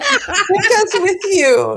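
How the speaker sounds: high, slow, desperate, pleading through a laugh. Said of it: "We're like".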